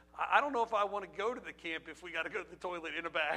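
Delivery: put-on fast, worried boy's voice, blurted through a laugh.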